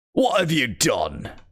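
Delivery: undead count vampire character voice. Voicing a game character who is already a vampire: vampire voice. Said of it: "It's the vampire voice".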